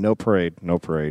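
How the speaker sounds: mumbled under the breath, low and quiet. Retelling how the chief walked away from the reporters: muttering under his breath. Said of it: "he was muttering".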